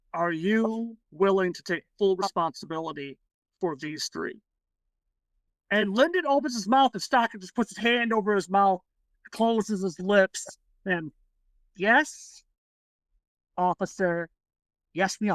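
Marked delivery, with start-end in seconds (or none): 0.2-4.4 grave, very serious, dead-serious delivery. Retelling how an officer questioned the group: retelling a very serious tone. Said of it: "he flat out in a very serious tone".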